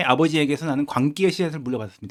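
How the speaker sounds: ordinary talk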